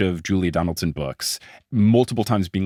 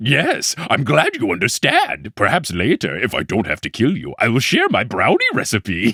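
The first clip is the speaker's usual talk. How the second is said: swooping storybook monster voice; 2 semitones higher than usual. Showing off the Gruffalo voice the speaker is proud of, in Gruffalo monster voice. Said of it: "I'm going to do is the Gruffalo".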